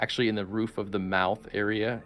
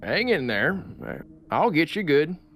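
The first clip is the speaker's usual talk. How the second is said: high, loud hill dwarf character voice; 7 semitones higher, 5 dB louder than usual. Narrator voicing a hill dwarf speaking to the newcomers, voicing a hill dwarf. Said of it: "this hill dwarf in like tattered robes".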